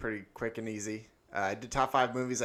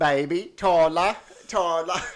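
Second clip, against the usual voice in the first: high-pitched, very loud calling out; 7 semitones higher, 12 dB louder than usual. Joking about a sequel, calling someone Baby: Lily James impression. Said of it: "That's my Lily James impression".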